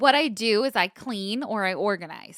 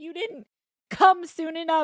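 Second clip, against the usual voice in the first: put-on yell, higher pitch; 9 semitones higher than usual. Retelling yelling at someone who came in during a crying fit: retelling own past yelling. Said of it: "I start yelling at him".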